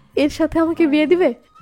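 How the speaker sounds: usual speaking voice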